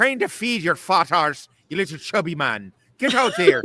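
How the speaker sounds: put-on high, loud Irish accent. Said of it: "that's how my grandfather sounded".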